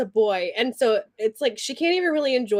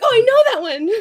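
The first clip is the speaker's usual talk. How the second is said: very high, very loud eager blurt; 11 semitones higher, 8 dB louder than usual. Act out how he'd answer a question, imitating someone so excited. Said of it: "he's just so excited".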